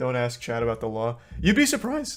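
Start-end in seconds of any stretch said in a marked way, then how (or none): 1.4-2.2 high voice, breaking mid-line. Reacting to a remark about Chad, voice cracking. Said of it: "That was a hard voice crack".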